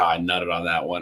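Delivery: low mutter under the breath, to oneself. Retelling own remark after a good golf shot: imitating muttering under breath. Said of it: "under my breath".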